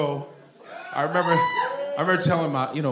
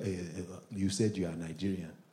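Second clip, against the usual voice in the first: very quiet, hushed voice; 9 semitones lower, 12 dB quieter than usual. Retelling how Nigerian friends test the speaker: imitating a Nigerian friend. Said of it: "Even Nigerians be testing me. They be like".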